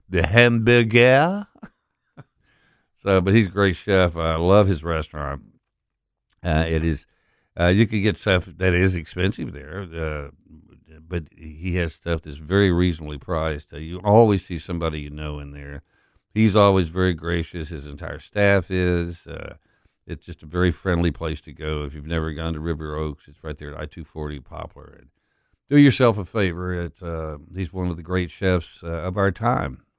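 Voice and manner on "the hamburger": put-on hamburger stretched out, slow, high, French accent. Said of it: "when he says hamburger sounds better".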